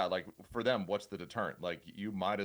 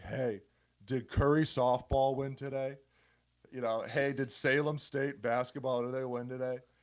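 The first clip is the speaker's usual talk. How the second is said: put-on drunk voice, much higher; 5 semitones higher than usual. Recalling calls from people asking about game results, imitating a wasted caller. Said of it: "some dude wasted in his basement".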